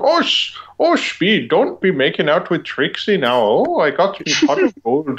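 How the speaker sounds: over-the-top put-on Irish accent, swooping pitch. Quoting a kid character's lines, in an exaggerated Irish accent. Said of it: "He has this Irish accent".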